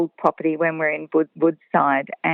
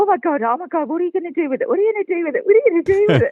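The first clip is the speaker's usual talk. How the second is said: mock frantic, very high, rattled-off panicked babbling; 14 semitones higher than usual. Retelling talking to a man who caught a snake; retelling her panicked shouting. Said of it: "I wasn't calm at all".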